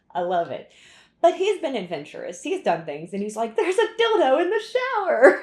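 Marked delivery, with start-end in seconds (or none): 3.5-5.4 very high, loud, giggling delivery. Retelling what he said, imitating someone giggling. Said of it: "giggling about these things".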